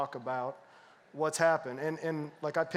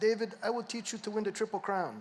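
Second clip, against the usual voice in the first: put-on thick Cuban accent, higher-pitched; 6 semitones higher than usual. Retelling a promise from the father's best friend: thick Cuban accent. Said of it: "he had a thick Cuban accent".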